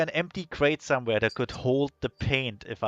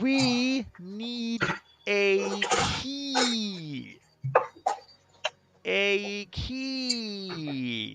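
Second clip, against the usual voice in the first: very slow, loud, over-clear, pitched up, key word stretched; 7 semitones higher, 3 dB quieter than usual. Speaking to a character who may not speak english: slow and loud speech. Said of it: "I can probably remedy that by speaking slowly and loudly".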